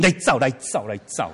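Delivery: ordinary delivery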